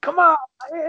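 whisper-yell. Retelling a tense movie scene where characters urge someone on: imitating a whisper-yell. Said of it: "Whisper yelling to each other".

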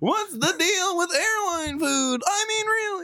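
put-on very high puppet-style comedian voice. Doing a bit during a chat about Wikipedia sources, Muppet-like Jerry Seinfeld impression. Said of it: "your Jerry Seinfeld impression is like a Muppet".

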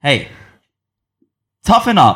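furious, angriest voice, full of anger. The speaker offers support in the style of Bulwark, using his angriest voice. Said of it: "in like his most angry voice that he has".

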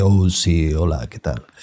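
slow, trained put-on radio announcer voice. Showing the voice taught in a podcast workshop: put-on radio announcer voice. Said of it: "me enseñó a impostar la voz de".

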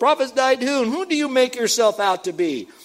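sarcastic mockery. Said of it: "See the sarcasm in there?".

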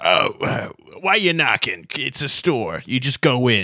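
little, small put-on voice of a talking keyhole. Narrating a scene where a little keyhole forms a mouth and speaks, talking keyhole voice. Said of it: "the little keyhole forms into a mouth and it says".

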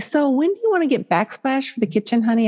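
put-on sugary, sweet, overly nice, coaxing little voice. Retelling how she asks her husband about the kitchen, retelling saying it really nicely. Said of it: "I say it really nicely".

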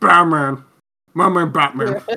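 loud repetitive puppet voice. Imitating a puppet character from Team America: Team America Matt Damon voice. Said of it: "every time Matt Damon said anything".

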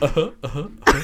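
silly cartoonish uh-huhs bounced up high and loud. Imitating the other speaker's Goofy-like uh-huh. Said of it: "As opposed to".

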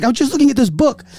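put-on heavy Chinese accent. Quoting a woman who panicked when asked what she was doing, heavy chinese accent. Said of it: "heavy Chinese accent".

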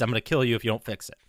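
put-on, low, rattled-off, spat-out unhinged freak-out. Speaker retells how a man reacts when someone fails him, imitating someone freaking out. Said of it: "He freaks the fuck out and says".

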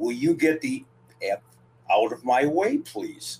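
whispered in a hushed voice. Retelling what a wrestler whispered while coming into the ring: imitating someone whispering. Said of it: "she whispered to me".

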